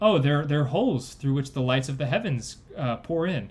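ordinary delivery

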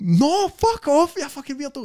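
put-on, very high, shrill shouting and bawling. Retelling telling off a man who was videoing: imitating own shouting and bawling. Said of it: "That was pure shouting and bawling".

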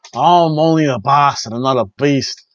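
put-on Georgian accent. Speaker recounts a scene, quoting Bastard Pac in his Georgian accent. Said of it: "in his Georgian accent".

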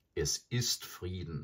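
ordinary delivery

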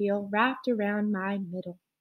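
plain

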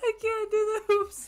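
high, words squeezed out through laughter. Trying to play while cracking up at a joke: laughing while talking. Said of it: "I'm laughing so hard I can't see the hoops".

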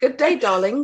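put-on British London accent. A guest, asked by the host to say good day, answers in a london accent. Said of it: "Please do good day in a London accent".

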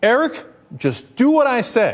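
play-acted firm, stern tone, high and swooping. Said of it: "he sternly reacted".

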